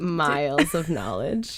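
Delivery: slow, mock-serious sarcastic voice. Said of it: "Oh, sarcasm".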